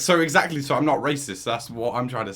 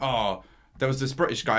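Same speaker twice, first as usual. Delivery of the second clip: plain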